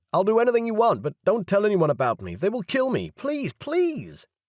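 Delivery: very high, piercing, shrill squeal. Reading a story aloud, the caught intruder begs not to be exposed: squealing. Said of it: "He squealed".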